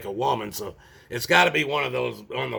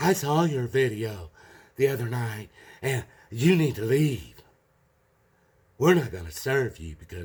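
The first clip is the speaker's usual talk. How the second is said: put-on girly voice, played silly. Speaker retells a man refusing to serve them, silly little girl voice. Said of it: "me trying to do a silly little girl voice".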